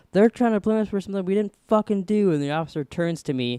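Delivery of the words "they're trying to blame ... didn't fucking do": loud, raised, high-pitched shouted yell. Retelling standing up to a police officer: retelling own yell. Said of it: "I stood up and I yelled".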